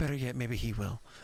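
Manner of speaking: speaking in a whisper. Voicing a character who leans in toward a player: whispering. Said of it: "she leans in and kinda whispers to you".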